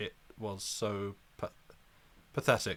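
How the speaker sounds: bored, slow, reluctant reading voice.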